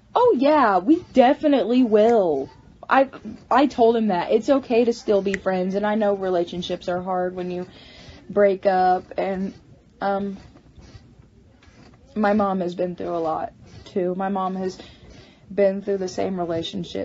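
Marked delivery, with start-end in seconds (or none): 4.3-17.0 rushed, holding back tears while talking. On a livestream, answering a viewer after a breakup, trying not to cry. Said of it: "I'm trying not to cry".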